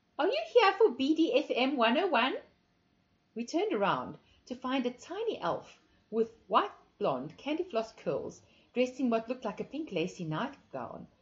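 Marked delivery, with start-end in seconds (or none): 0.2-2.4 breathless, airy, high-pitched lisping voice. A voice surprises the narrator and Alice before they leave, breathless high-pitched lisp. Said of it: "a breathless, high-pitched voice lisped".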